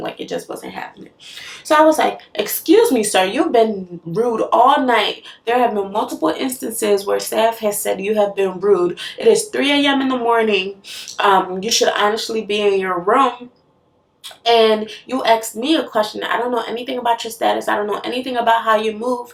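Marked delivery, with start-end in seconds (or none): none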